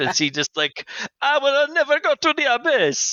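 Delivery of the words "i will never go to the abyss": very high-pitched, slow Italian accent. Discussing what accent a character should have, Dion with Italian accent. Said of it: "Is Dion Italian?".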